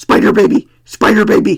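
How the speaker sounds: loud, goofy monster voice, crowing over and over. Retelling a man crowing on seeing Spider Baby on the counter, silly monster voice. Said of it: "He crowed in this silly voice repeatedly like a monster".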